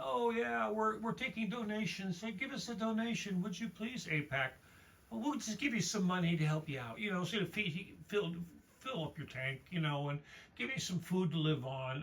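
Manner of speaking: put-on politician voice, sarcastic. Imitating politicians taking donations: sarcastic imitation of politicians. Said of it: "I'm just being sarcastic".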